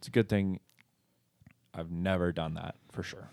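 wry, dry, plainly insincere sarcasm. Joking right after another speaker's ironic remark about misused scripture: sarcastic. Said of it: "That was sarcasm".

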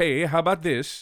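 put-on Norwegian accent. Imitating a Norwegian musician's words: mock Norwegian accent. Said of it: "the only accent that's okay to make fun of".

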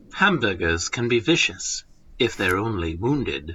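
low, hushed documentary narration voice. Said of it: "This is the right voice".

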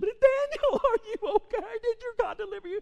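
very high, anguished calling out. Retelling the story, the king comes down and calls out, acting out an anguished voice. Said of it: "This is with an anguished voice".

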